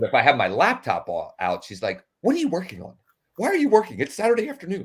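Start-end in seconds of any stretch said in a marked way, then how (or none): 2.2-4.9 terribly botched voice, high and swooping. Retelling what Pam says on seeing the laptop out: terrible impression of Pam. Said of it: "that was a terrible impression".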